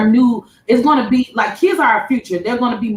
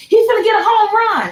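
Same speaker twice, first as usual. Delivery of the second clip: shrill, thrilled, very high excited shout; 12 semitones higher than usual. Describing faking interest while watching basketball, acting out an excited yell. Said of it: "I'm yelling".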